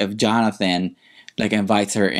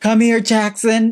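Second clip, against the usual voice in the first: play-acted thrilled, excited delivery, very high-pitched; 12 semitones higher than usual. Retelling a line a cast member said: imitating Melissa speaking excitedly. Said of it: "She was so excited".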